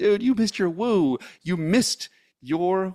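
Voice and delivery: high, acted-out shouted scolding tone. Retelling what Brian Biro yelled in his mind: imitating Brian Biro yelling. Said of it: "yelling at me".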